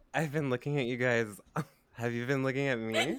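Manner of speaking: loud, acted, put-on drunk voice. Quoting a woman, the speaker puts on a drunk voice. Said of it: "I gotta put on my drunk voice".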